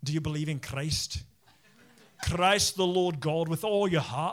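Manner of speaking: speaking in a Scottish accent. Imagining preaching an entire sermon, in a scottish accent. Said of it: "preach an entire sermon just in a Scottish accent".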